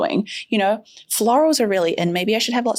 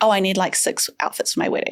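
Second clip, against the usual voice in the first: put-on deadpan, matter-of-fact delivery; 2 semitones lower than usual. Explaining Indian wedding events, voicing a typical bride; retelling it deadpan. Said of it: "it's not unusual to deadpan say".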